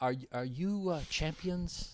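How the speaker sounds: put-on Hawaiian accent, spoken slowly. Retelling what a fighter said after tapping him: imitating Max Holloway's Hawaiian accent. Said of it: "he's got that Hawaiian accent".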